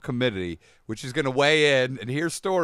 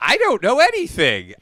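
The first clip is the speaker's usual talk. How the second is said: loud, swooping nineteen fifties housewife voice; 10 semitones higher, 8 dB louder than usual. Mocking a woman who says her husband handles finances: imitating a 1950s housewife. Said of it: "she sounds like a fucking nineteen fifties housewife".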